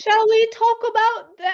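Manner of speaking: very high-pitched, terribly bad English accent. Starting the talk, in a bad English accent. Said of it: "that's the worst English accent ever".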